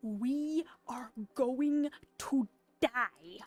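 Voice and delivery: very loud, slow, drawn-out booming delivery. Retelling a movie scene with a spike trap coming down: Indiana Jones line delivery. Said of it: "he says it in this way".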